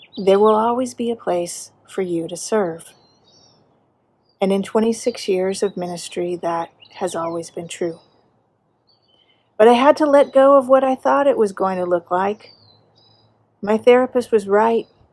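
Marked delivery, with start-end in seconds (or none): 0.2-3.0 calm, clear and loving voice. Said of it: "in a clear and loving voice".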